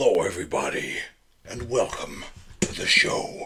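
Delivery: over-dramatic delivery. Opening the show and welcoming everybody, for dramatic effect, in a dramatic voice. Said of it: "Why am I talking to you like this?".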